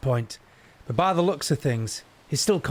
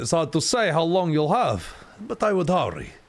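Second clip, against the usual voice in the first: put-on rough, swooping Russian accent; 3 semitones higher than usual. Voicing a doctor character telling the others to hurry: rough russian accent. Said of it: "maybe we'll have this doctor be rough, Russian".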